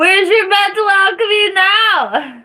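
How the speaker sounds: loud, high-pitched, full-on, stretched-out yell. Speaker calls out while going to get a phone charger: yelling. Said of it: "Sorry, I'm yelling".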